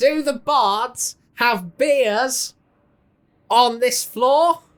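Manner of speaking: yelling out. A character in prison calls out to anyone who can understand, shouting. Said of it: "Anybody that can understand me while I'm shouting".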